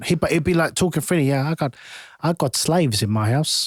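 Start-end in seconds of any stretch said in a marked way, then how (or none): 1.3-3.7 casual, offhand put-on South African accent. Retelling what a South African kid used to say: imitating a South African accent. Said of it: "I can't even do the accent".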